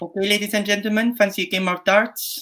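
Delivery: put-on Filipino accent, very high-pitched. Asked by the host to redo the line in another accent: Filipino accent. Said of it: "Give me a Filipino accent for that".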